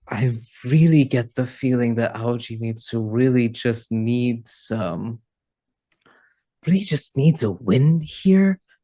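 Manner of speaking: low, quiet hushed whisper. A character turns to the rest of the crew while the dragon contemplates, low whisper. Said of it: "in a low whisper".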